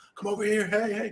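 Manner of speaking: very high-pitched, loud yell. Retelling how a frantic man yelled to people nearby: imitating a man yelling. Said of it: "he's yelling to the people".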